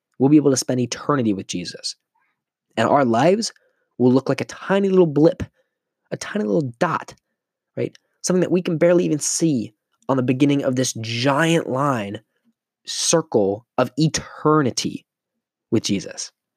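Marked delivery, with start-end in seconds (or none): 2.8-16.3 heartfelt, earnest, passionate, fervent preacher voice. Speaker telling listeners about eternity with Jesus, passionate. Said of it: "If you can hear the passion in my voice".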